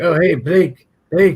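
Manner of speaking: very high, shrill, booming, slow, drawn-out call. Retelling a friend's impression of someone: Jimmy impression. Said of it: "He does Jimmy impression".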